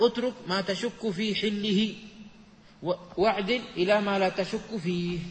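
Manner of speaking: ordinary talk, nothing marked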